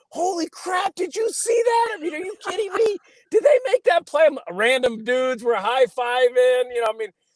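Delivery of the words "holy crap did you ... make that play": put-on, very high yelling in disbelief. Recalling working an NFL game on the sidelines, retelling yelling like a fan. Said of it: "I'm yelling like a fan".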